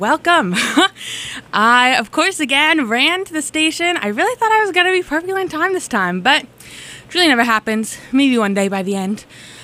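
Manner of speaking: breathless, winded, out-of-breath delivery. Radio host welcoming listeners after running to the station, out of breath. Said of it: "But I'm out of breath".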